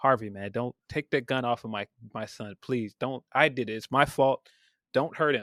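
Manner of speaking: earnest, desperate, begging tone. Retelling a film scene where a character pleads with Harvey: imitating someone begging and pleading. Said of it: "when he's begging and pleading with".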